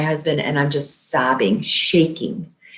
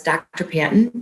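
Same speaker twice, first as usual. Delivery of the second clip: ordinary talk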